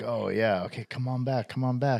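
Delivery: put-on, high-pitched calling out. Thinking out loud, comparing her to Manusos during his experiment: imitating Manusos yelling. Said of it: "he's yelling".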